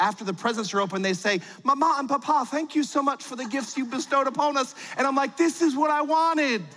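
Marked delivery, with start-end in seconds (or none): 1.6-4.7 put-on British children's accent, pitched up. Imagining the kids thanking their parents on Christmas morning, in a British accent. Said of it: "my kids have British accents".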